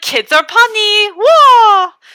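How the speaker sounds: put-on amazed outburst, high and drawn out. Describing a picture of Rosie O'Donnell: imitating surprised Rosie O'Donnell. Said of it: "She feels so surprised".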